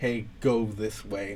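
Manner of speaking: ordinary delivery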